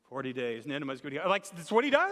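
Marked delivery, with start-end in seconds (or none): 0.1-1.3 flat, unconvinced, half-hearted mumble. Acting out his warning to Nineveh, in a mock half-hearted mumble. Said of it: "He's not even in it. He's kind of almost mumbling it".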